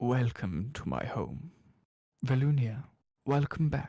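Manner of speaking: silky, polished, very smooth and refined voice. A father welcomes his daughter velunia home, with a very smooth voice. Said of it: "he greets you with a very smooth voice".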